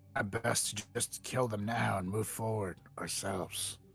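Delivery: hushed, whispered voice. In character, a player whispers to the group. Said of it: "I whisper".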